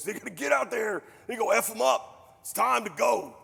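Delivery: slow, rough, rallying pep-talk voice. Mocking how managers talk about their teams: GM voice. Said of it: "me being a G M voice".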